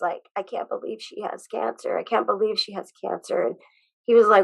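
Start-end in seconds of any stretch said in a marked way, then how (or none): 0.4-3.4 put-on upset, tearful crying with repetition. Retelling a son's words on the phone about his sister's cancer: imitating crying speech. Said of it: "he was crying".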